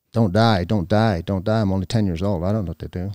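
ordinary talk

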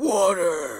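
gravelly, aggressive heroic voice. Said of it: "it just sounds so aggressive".

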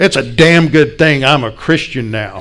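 furious, loud, angry, bellowed outburst. Recounting a car crash, quoting the other driver jumping out: retelling an angry bellow. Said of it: "jumped out of his car with fists clenched and bellowed".

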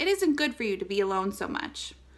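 ordinary delivery

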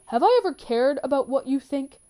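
cold, cutting, harsh, very loud voice. A father cuts his son off mid-sentence; spitting coldly. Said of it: "Walter spat coldly".

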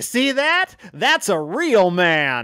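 very loud, high exclamation.

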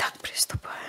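soft, voiceless whisper. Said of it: "шёпотом".

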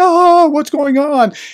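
very high, squeaky freak-out. Imitating a guy who trolls propaganda sites and wigs out: Piglet voice. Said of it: "almost like Piglet from Winnie the Pooh".

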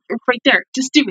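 plain

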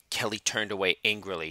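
ordinary delivery, nothing marked

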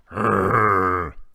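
growling like a rhinoceros. The rhinoceros growls at Fluffy, rhinoceros growl. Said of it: "said the rhinoceros".

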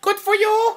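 squeezed, high-pitched put-on alien voice. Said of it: "I'm gonna do my Conehead impression".

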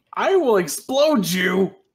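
shrill, very loud, high-pitched full-blast yell. Voicing Katsuki while attacking another speaker: Katsuki voice. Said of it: "That would be me, Katsuki!".

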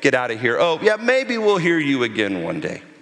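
pious, patronizing, sing-song, dismissive tone. Acting out listeners brushing off Paul, in a mock-condescending, dismissive tone. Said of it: "condescending tone toward Paul, like".

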